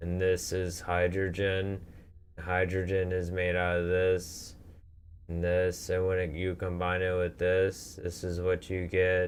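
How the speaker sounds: flat, droning monotone in one tone. Recalling a first-class teacher who always droned, imitating his monotone voice. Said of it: "the teacher would talk in such a monotone voice all the time, just like this".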